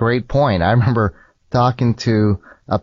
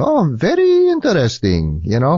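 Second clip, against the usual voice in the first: put-on Indian accent, swooping and slow; 4 semitones higher than usual. Retelling how a man answered him, in that man's Indian accent. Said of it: "in his Indian accent".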